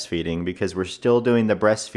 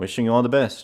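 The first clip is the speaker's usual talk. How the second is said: offhand, dismissive, tossed off like it's nothing; 3 semitones higher than usual. Retelling a scene from the show, imitating Homelander. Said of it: "And then Homelander going".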